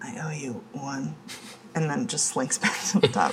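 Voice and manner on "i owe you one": barely audible, very quiet, slow. Acting out what she seemed to say in the story, very quiet. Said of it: "really quietly goes".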